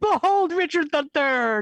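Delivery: loud, high, grand hype-man herald voice. Playing a character proclaiming a king's approach as his hype man: loud proclaiming hype voice. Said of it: "the louder she is and the bigger gestures".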